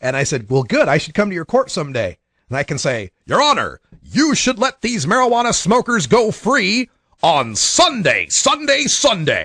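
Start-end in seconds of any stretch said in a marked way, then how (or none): 3.2-9.5 big, booming radio announcer voice, drawn out. Telling a judge what he'd say in her court, in a booming radio voice. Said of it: "good booming radio voice".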